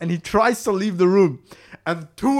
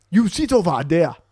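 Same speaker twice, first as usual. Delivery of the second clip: put-on Chinese accent; 2 semitones lower than usual. Retelling how an imposing figure at the door ordered them to sit, put-on Chinese accent. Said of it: "Is that Chinese?".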